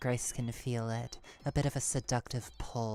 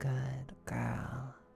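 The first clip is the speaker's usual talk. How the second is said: gentle, soft, creaky purring voice; 3 dB quieter than usual. Narrator reads a voice heard as Grace grips a gun, soft purring voice. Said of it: "A soft purring voice saying".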